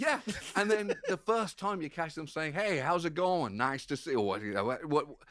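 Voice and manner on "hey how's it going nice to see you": put-on American accent with American r. Describing catching someone greeting people with an american r, american accent. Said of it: "any kind of like American R".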